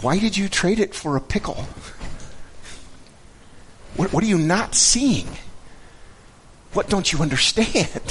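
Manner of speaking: puzzled, confused sound. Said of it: "the perplexed tone".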